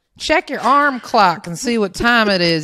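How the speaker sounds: loud, fast put-on Southern accent, laid on thick. Retelling a weekend joke with a best friend: put-on southern accent. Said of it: "we decided to be real Southern".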